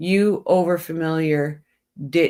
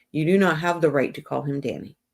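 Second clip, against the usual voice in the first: ordinary delivery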